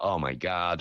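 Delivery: American accent, exclaimed. Speaker guessing how someone might answer, imitating an American accent. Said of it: "it might be American".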